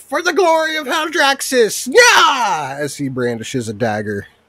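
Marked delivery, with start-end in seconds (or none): 0.0-2.8 tiny creature voice, very high, drawn-out battle cry. Voicing a little guy brandishing a dagger: little guy's battle cry. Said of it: "you hear this little guy".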